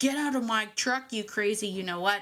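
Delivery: put-on angry man yelling and cursing. Retelling a driver cursing from his truck, imitating an angry man cursing. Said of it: "start cursing at me".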